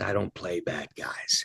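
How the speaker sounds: put-on low, soft, hissed Dutch accent. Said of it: "hissed in that thick Dutch accent".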